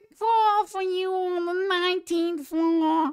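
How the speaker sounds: put-on very high girly voice. Retelling what the girls said, imitating the girls' voices. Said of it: "That's scary good".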